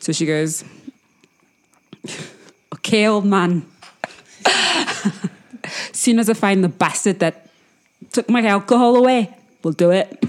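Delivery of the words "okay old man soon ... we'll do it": put-on strong loud Irish accent. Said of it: "It's Irish".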